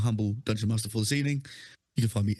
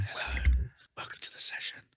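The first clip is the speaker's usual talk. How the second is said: mock asmr-style whisper. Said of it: "Whispering, whispering".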